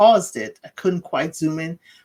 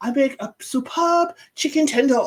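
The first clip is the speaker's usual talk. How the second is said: put-on French accent, pitched higher; 8 semitones higher than usual. Retelling a TV scene where a character boasts about cooking: imitating a French accent. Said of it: "he says it with a French accent".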